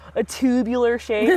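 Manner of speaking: very California boy put-on way of talking. Describing a tubular shape the way they like to: California boy accent. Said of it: "I always like to say this in a very like California boy way".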